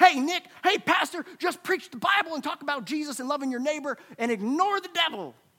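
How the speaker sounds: high-pitched, put-on country accent. Pastor acting out people's typical objection to his preaching, country accent impression. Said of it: "I don't know why everyone has a country accent".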